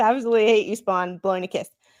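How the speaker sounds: usual speaking voice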